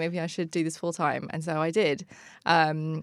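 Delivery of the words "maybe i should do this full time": ordinary talk, nothing marked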